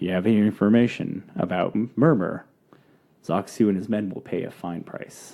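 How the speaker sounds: confiding low voice. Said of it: "lowers the bell and, like, leans into you and goes".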